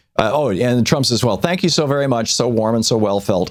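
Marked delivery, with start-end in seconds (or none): 1.3-3.5 mock, insincere tone laid on with sarcasm. Retelling what Trump said to an interviewer: imitating sarcastic thanks.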